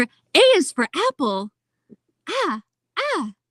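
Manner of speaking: cheerful, high, drawn-out swooping sing-song voice. Speaker demonstrating the friendly voice she uses for kids, cheerful Disney princess voice. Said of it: "so like cheerful Disney princess".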